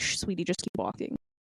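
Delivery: whispered, hushing shush. Picturing a mother hushing her small child who wants one, imitating a hushing mother. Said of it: "she's like".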